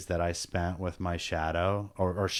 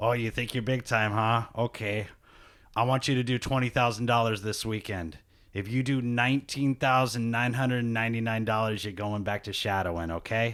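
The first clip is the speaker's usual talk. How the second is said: put-on talking with cigar in mouth, higher pitched; 4 semitones higher than usual. Retelling the GM's challenge, imitating talking with cigar in mouth. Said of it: "He always talked like he had a cigar in his mouth".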